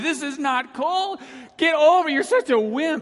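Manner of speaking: put-on very high, scolding shout. Retelling going outside in the cold and yelling at own body, retelling a yell. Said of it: "I'm yelling at my body".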